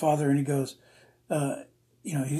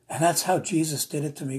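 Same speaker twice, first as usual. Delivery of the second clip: normal talking voice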